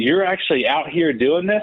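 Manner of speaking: high, light, mild yell. Retelling a man's reaction to a campaign flyer: imitating someone yelling.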